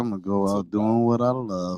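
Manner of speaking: put-on whisper. Retelling what was said quietly into the mic earlier: imitating his own whisper. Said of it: "I just whispered".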